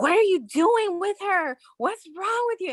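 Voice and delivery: mock very high, furious, accusing yell. Retelling a girl screaming across the street at the speaker's date; retelling angry screaming. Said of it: "this girl just starts screaming at him".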